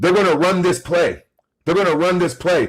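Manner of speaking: high-pitched scream. Retelling how the Bulls assistant coach screamed a warning: imitating Hamlin screaming. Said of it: "He's screaming saying".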